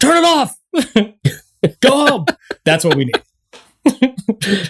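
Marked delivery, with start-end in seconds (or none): 0.0-2.3 very high, shrill, high-pitched shouted yell. Acting out a coworker yelling from her office: imagined yelling. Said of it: "she just yells out of her office".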